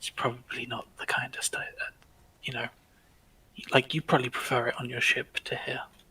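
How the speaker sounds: very quiet whisper. A character speaks so the innkeeper can't hear, lowered voice. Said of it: "she lowers her voice so the innkeeper can't hear".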